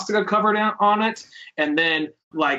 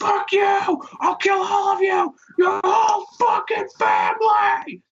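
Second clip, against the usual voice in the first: shrill, very high, drawn-out screaming rant; 14 semitones higher than usual. Retelling a drunk man's screamed threats: imitating a man screaming. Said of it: "just screaming, like".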